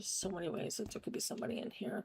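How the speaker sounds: soft, nervous whisper.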